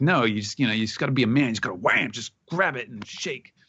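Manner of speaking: irritated, fed-up, thoroughly annoyed tone. Retelling Luffy explaining a handshake to Momonosuke: Luffy, really annoyed. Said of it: "Luffy is really annoyed".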